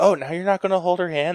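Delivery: very high-pitched, mocking, ribbing taunt. Recounting a story, the speaker voices others giving them a hard time, retelling others teasing. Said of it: "they were like giving me a hard time".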